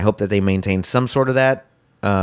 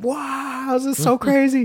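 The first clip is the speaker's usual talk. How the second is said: very high, stretched-out fanboy shriek. Recounting his fanboy reaction to the reveal, re-enacting his own scream. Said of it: "I screamed like I was screaming".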